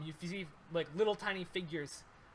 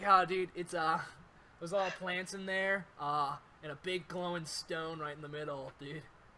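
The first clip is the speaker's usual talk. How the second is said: beach surfer dude voice. Voicing an owl companion in a game, surfer dude voice. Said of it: "surfer dude?".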